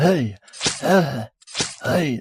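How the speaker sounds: protesting jack-o'-lantern voice. Answering a request for a jack-o'-lantern impression: jack-o'-lantern impression. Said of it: "do your best, uh, jack-o'-lantern impression".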